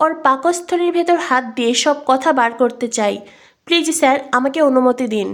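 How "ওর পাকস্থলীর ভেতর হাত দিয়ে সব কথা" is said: usual speaking voice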